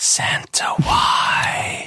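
faint, feeble, small, weak, breathy whisper. Narrating the lieutenant's final words as his body dissolves, in a small, weak voice. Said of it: "in a small, weak voice".

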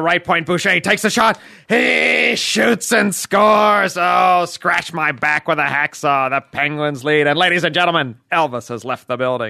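booming, deliberate, unhurried announcer call. Asked for the Penguins announcer, calling a goal: Mike Lang impression. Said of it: "give me a little Penguins".

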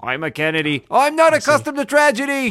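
very high, very loud cartoon voice. Doing a voice the others asked for: JFK voice from Clone High. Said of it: "It's my J F K from Clone High".

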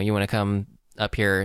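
ordinary talk

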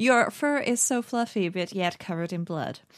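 jeering, mocking, taunting tone. Casting a mocking spell on a bugbear in combat: mocking. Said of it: "I am mocking".

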